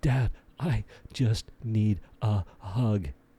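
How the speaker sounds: put-on tearful, sobbing, crying little child voice. Retelling his son during a homework battle: imitating a sobbing child. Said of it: "he's like sobbing".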